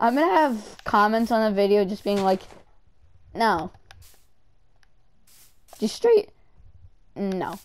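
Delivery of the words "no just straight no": voice cracking mid-word, dropping low. Joking about future comments on the video, voice cracking. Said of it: "that was a voice crack".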